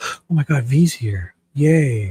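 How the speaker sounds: fake excited delight and surprise, drawn way out. Entertainer pretending to be surprised that v is here: pretend excited surprise. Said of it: "It's like I pretend I'm surprised".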